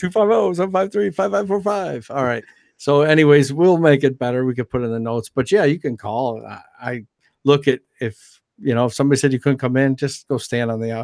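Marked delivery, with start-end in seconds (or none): 0.0-2.1 radio announcer voice, pitched up. Repeating a call-in phone number, the speaker tries an announcer voice. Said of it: "How about that announcer voice?".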